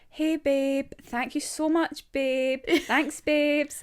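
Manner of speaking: sarcastic, mocking put-on baby talk, high and slow. Recalling a joke voice used with others, a mocking sarcastic 'babe' voice. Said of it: "I spoke like... taking the fucking piss... sarcastically".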